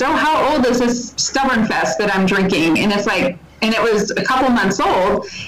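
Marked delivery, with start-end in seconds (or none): none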